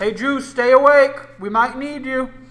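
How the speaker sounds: very loud, high-pitched yell calling across a distance. Torque turns to Justine, who is far off, yelling. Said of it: "and he yells".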